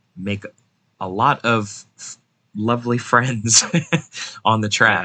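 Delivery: heavily sarcastic, ironic tone. Predicting what a small short track will bring for drivers: totally sarcastic. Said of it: "saying that in a totally sarcastic way".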